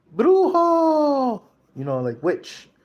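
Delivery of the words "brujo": long, very high, drawn-out yell. Retelling how someone in a hushed crowd yelled: imitating a crowd member yelling. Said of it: "someone yelled".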